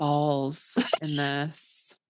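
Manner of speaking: slow, drawn-out, nasty phone sex voice. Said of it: "the way you said balls was so fucking nasty".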